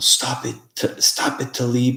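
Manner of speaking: put-on Afghan-accented speech. Retelling an Afghani man's voice heard through a spirit box: imitating a strong Afghan accent. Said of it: "this accent. It was very strong".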